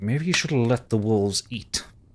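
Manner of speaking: words forced through gritted teeth, clenched jaw. A rescued character answers her rescuer, through gritted teeth. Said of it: "kind of goes through grit teeth".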